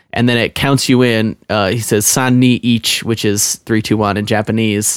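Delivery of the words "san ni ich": normal talking voice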